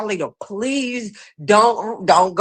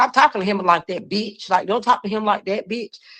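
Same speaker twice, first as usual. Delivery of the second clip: ordinary delivery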